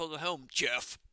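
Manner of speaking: robotic AI system computer voice. Voicing the ai greeting the returning crew: voicing the ai. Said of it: "That was the A I going like".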